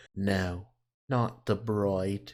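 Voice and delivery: put-on very slow, drawn-out English accent. Repeating a trailer line while reacting to it: English accent. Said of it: "Am I doing an English accent?".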